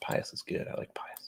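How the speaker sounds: soft, unvoiced whisper.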